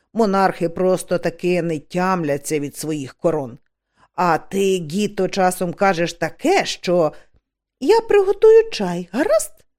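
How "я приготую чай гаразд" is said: lively, brisk, pitched very high. A witch cuts into two older witches' prickly exchange, speaking briskly. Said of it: "Жваво сказала Маград".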